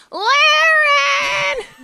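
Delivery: wild, very high, drawn-out Texan Southern yell. Recalling someone screaming a name on soccer fields, Mrs. McMullen's wild-accent scream. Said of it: "she had a wild accent. And we'd be on the soccer fields. And she'd be like".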